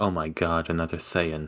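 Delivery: dry, hushed, sarcastic muttering under the breath. Voicing a character who mutters about another Thayan: sarcastic mutter under breath. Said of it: "under their breath, sarcastically".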